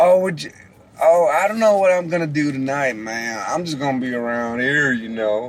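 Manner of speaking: relaxed, easygoing, laid-back West Coast accent. Speaker demonstrating American regional accents to another speaker, laid-back West Coast accent. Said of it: "like the West Coast".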